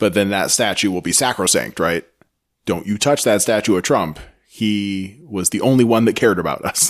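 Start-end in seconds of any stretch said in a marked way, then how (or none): none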